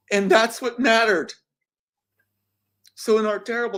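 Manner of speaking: very high voice, choked up, near breaking into tears. Telling about a young boy who was found, holding back tears. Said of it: "I'm sorry".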